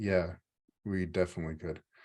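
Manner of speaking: heavily disdainful, contemptuous tone. Playing Sean, who answers another player's question: disdainful. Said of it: "just disdain all over his face".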